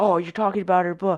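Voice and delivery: put-on aggressive male voice. Retelling a stranger accusing them of talking about a lady: imitating an aggressive accusation. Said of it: "he's very aggressive".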